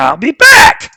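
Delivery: shrill full-throated yell, very loud and very high. Doing an impression that needs work, speaker delivers the line as a yelled Pee-wee impression. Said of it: "he has to yell it".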